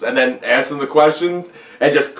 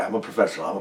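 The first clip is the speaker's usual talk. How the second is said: low, intimidating half-whisper; 8 semitones lower, 11 dB quieter than usual. Retelling a film scene, half-whispering Denzel impression. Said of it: "And he's whispering".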